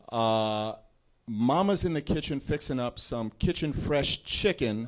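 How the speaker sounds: ordinary talk, nothing marked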